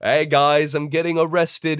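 strange put-on voice. Reading out a social media post, then questioning it: odd put-on delivery quoting a post. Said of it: "Why am I speaking like that?".

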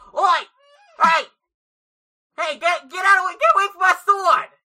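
loud put-on character voice. Voicing Forkstab, after stepping back from the mic, loud shouting as Forkstab. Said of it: "I gotta get further away from my mic for this".

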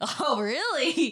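sarcastic mock surprise, high, slow drawl.

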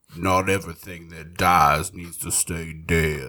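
jowly southern gentleman voice. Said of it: "more like a southern jowly gentleman".

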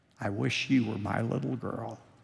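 soft, hushed half-whisper. Retelling what the teacher said during the hearing test: imitating a half-whisper. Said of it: "Missus Leonard said in her whisper".

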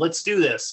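ordinary talk

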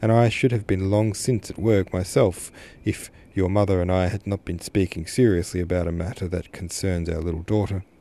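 ordinary delivery, nothing marked

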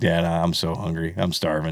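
talking dog voice. Speaking for the dog as if it talks to Dad: voicing the dog Bug. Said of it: "He's like".

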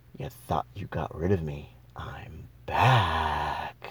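eerie, low, hushed demonic voice, end drawn out. Retelling the voice heard in their head after a paranormal experience: creepy demon voice. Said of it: "the same voice in my head goes".

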